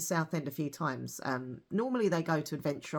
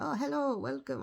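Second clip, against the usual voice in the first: very high-pitched, bad put-on French accent; 10 semitones higher than usual. Imitating the show's host greeting people at the door: bad french accent. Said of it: "I can't do a French, French accent".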